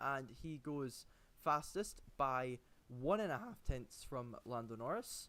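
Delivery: slow, drawn-out delivery with voice cracking. Commentating lap times as drivers cross the line, voice cracking. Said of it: "That was the voice crack there".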